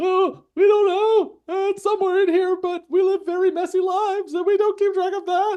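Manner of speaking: very high, loud, scared squeaky voice. Voicing scared people who don't know where the marble is hidden: voicing scared people. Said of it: "the scared people".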